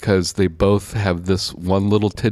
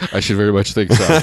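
ordinary delivery

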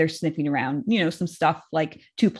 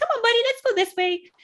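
put-on, very high, cheerful, coaxing little voice. Showing what they say to him when an ambulance comes: happy voice. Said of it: "Happy voice".

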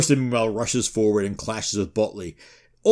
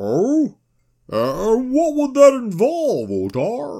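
put-on drunken slurred voice; 13 semitones higher than usual. Telling a saga scene where Ljot stands up and answers, drunken Ljot voice. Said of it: "I was going for he's drunk off the shine".

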